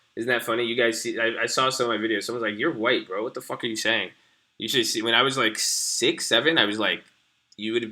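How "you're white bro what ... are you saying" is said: ordinary delivery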